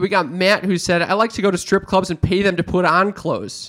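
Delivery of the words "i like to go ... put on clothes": plain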